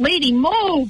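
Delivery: acted-out screaming. Recounting yelling at a driver sitting still in front of an ambulance, retelling a scream. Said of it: "and I'm screaming to her".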